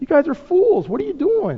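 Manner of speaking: high, mocking jeer.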